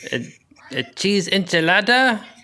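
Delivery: bad, high-pitched, fake put-on Mexican accent. Asked to name a favorite Mexican food in a Mexican accent. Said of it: "say it in Mexican uh, accent".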